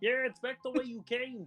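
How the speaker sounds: very high, put-on frog puppet voice. Listing voices the speaker can do, a line in Kermit the Frog voice. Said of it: "I can do Kermit the Frog".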